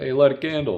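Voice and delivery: put-on high, loud cartoon character accent. Retelling a funny movie scene: Hoodwinked character impression. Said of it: "That's a good accent".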